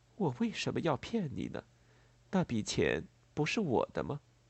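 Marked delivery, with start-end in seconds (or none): none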